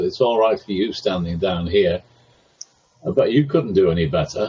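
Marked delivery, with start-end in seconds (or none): none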